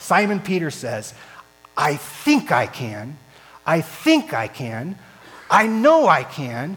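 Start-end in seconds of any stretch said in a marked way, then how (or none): 1.8-6.8 put-on speech through gritted teeth, louder. Retelling what a man says, acting out speaking through clenched teeth. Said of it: "With clenched fists and clenched teeth".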